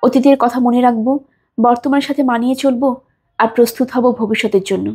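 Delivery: plain reading voice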